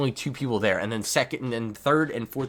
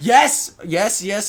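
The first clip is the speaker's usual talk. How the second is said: very loud, high, thrilled yell; 10 semitones higher, 9 dB louder than usual. Reacting as the opponent fails to pull a heal: yelling in excitement. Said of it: "sorry for yelling".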